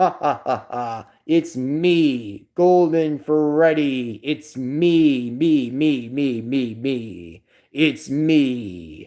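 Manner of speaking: very slow character voice, "me" drawn out. Showing the voice done for Golden Freddy: Golden Freddy voice. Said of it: "his voice is like this".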